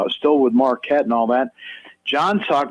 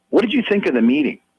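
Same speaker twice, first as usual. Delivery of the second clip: put-on very serious tone, much faster; 2 semitones higher than usual. Retelling how a man questioned someone about a meeting, imitating a very serious tone. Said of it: "in a very serious tone".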